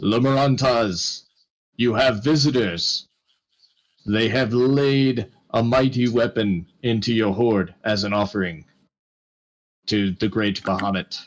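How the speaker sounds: gentle call, voice carried. Storyteller voicing a soft-spoken man who suddenly booms his voice up the stairs. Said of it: "suddenly he just he just booms his voice up the stairs".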